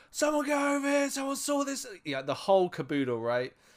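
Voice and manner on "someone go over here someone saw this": very high-pitched shouted yell. Retelling how the group rolled an injured friend into the hospital: retelling a yell.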